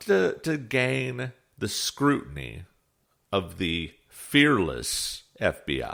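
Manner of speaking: heavy, dripping sarcasm, swooping and slow. Describing posts that draw FBI scrutiny, dripping with sarcasm. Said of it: "dripping with scar-, sarcasm".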